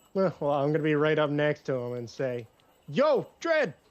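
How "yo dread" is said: very high, very loud, startling yell. Sneaking up right next to a character and greeting him: shouting really loudly. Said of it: "Really loudly".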